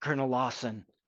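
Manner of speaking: soft, hushed half-whisper. A game narrator voices a character half-whispering a name down to the player: half-whispering. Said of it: "Michael whispers down to you and says".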